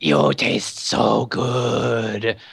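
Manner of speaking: slow creature voice hissing close into the ear. The game master voices a creature hissing into a player's ear; hissing creature voice. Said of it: "he hisses in your ear and he says".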